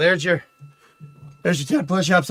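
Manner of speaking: breathless, winded, out of breath. Just finished ten push-ups and counting them off, out of breath. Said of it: "I'm actually out of breath from that".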